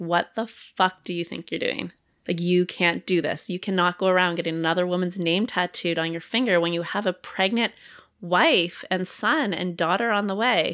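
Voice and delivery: ordinary delivery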